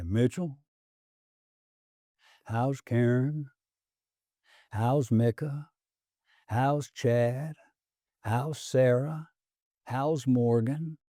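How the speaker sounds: slow, drawn-out Texas drawl. Recalling how a late man ended their Friday meetings, in his deep Texas voice. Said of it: "in his very deep Texas voice".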